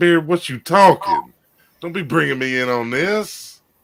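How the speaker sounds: high, loud, slowed-down protesting voice.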